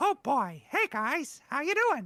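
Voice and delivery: high, loud, squeaky sing-song voice. Asked for his solid accents, the guest does one of his easy go-tos, Mickey Mouse voice. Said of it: "one of my easy go-tos is Mickey Mouse".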